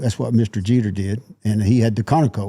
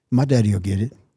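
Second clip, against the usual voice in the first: put-on deadpan, serious delivery. Retelling a line said to a little girl at a restaurant: imitating a deadpan serious delivery. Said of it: "just as deadpan serious to the little girl".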